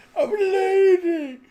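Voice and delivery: shrill, very high, very loud, drawn-out stretched ending. Acting out a character's line after failing through laughter: imitating a character's line. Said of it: "when he's got his legs crossed over".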